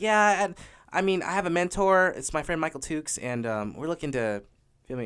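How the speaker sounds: put-on timid, meek voice. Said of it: "I was acting all meek".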